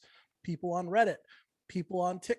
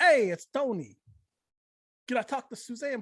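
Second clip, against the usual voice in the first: put-on heavy, thick Brooklyn accent; 5 semitones higher, 5 dB louder than usual. Recalling a man phoning to ask for the speaker's mom, Tony's thick Brooklyn accent. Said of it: "he had this like really thick Brooklyn accent".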